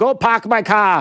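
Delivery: bad put-on Massachusetts accent. After admitting you can't do the accent, try your best anyway in a bad Massachusetts accent. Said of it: "I can't do a Massachusetts accent".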